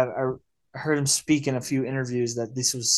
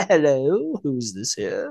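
put-on English accent, spoken slower. Describing a film scene with a phone call, doing Rob Reiner's English accent. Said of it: "he just like dives into that like English accent".

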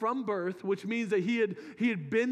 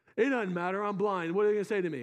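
plain

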